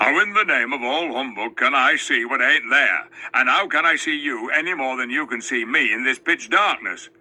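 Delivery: grumpy, sullen, surly voice. Narrator reading a dwarf answering a girl who says she can see him: surly voice. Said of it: "said one of them in a surly voice. / he shouted. / said one of them in a surly voice".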